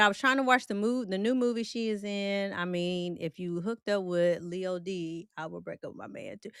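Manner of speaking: ordinary talk, nothing marked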